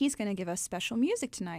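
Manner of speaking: ordinary delivery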